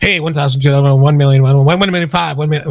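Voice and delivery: very fast-talking, rapid auctioneer patter. Joking that listings are now auctions, doing a fast-talking auctioneer voice. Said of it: "you gotta have that guy that talks fast".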